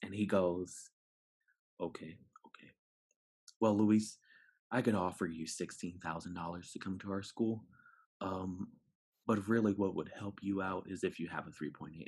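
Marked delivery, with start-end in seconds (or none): 1.8-12.1 approachable, inviting, welcoming voice. Retelling what a school recruiter said at a conference: imitating Philip Mack's welcoming voice. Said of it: "And I do that voice because he has, his voice is just so welcoming".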